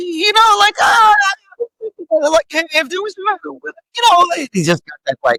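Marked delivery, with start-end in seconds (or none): 0.0-4.3 very high-pitched character voice. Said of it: "if I was doubling Charlie and how he does it".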